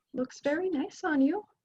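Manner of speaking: very quiet, soft voice. Narrator voicing a character who notices the players wearing her cloak, very quiet. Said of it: "she's very quietly says".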